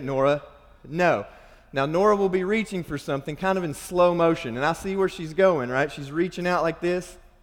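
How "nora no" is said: stern, serious, firm delivery. Telling nora no as she reaches for something, retelling a stern no. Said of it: "I sternly say".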